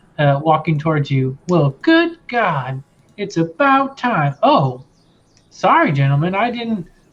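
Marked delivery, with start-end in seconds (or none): 1.5-6.9 excited, amazed, slightly angry, higher. Narrating a scene, a woman of thirty-five walks up to the group, excited, amazed, a little angry. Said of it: "extremely excited and a little amazed and uh, a little angry".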